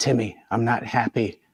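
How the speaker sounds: hushed stage half-whisper. Retelling what the cameraman said while filming: imitating a half-whisper. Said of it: "And Rich whispers".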